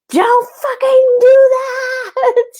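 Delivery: very high, loud scream with a drawn-out, stretched "that". Retelling what the group yelled at someone, imitating a scream. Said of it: "We're screaming".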